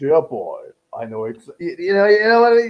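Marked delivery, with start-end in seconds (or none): 0.0-1.5 slow, deliberate, drawn-out character voice, each word weighed. Quoting an actor's line back to the other speaker: Christopher Lee impression. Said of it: "You can just hear it".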